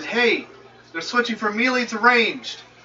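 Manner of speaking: high, acted, in-character scream. Warning the crew that enemies are switching to ranged attacks: in-character scream. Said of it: "I'm gonna be screaming".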